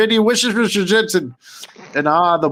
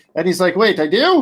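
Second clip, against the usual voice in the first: normal talking voice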